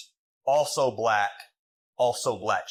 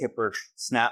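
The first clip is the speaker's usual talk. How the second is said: ordinary talk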